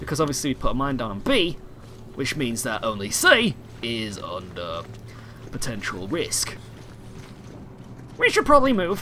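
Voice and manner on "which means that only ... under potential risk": low, slow, dragged funny voice. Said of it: "You sound so funny".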